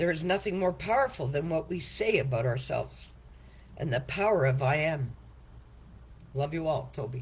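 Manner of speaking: choked-up voice, catching with emotion. Author reads from a book written for a first grandchild, getting choked up. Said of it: "Sorry for getting choked up".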